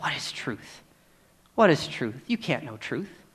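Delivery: low, soft, dismissive scoffing sneer. Speaking about Christians proclaiming truth, voicing the culture's reply: mock scoffing. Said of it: "with a scoff in its voice that says".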